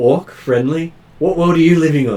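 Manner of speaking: incredulous game-character voice. Voicing a character who looks weirdly at a player: NPC looking at you weirdly. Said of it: "He looks at you weirdly going".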